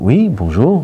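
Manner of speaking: slightly cheery, hearty tone. Retelling how a man surprised himself greeting someone, imitating someone jovial. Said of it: "comme ça, de manière un peu plus joviale".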